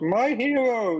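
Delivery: high, slow mock heroic shout.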